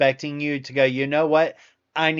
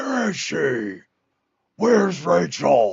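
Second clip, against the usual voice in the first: rough growl with the pitch swooping up and down; 4 semitones higher than usual. Joking about being made to growl: growly Batman voice. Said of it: "I'll end up sounding like".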